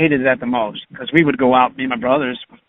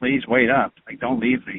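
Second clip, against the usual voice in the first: put-on begging, pleading tone; 4 dB quieter than usual. Retelling begging his sister to wait up: imitating own begging. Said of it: "begging her".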